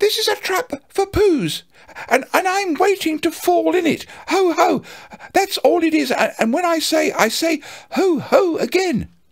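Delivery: fast, squeaky, very high voice. Narrating the story, Piglet, completely unsettled, answers back in a quick squeaky Piglet voice. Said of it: "he said very quickly and squeakily".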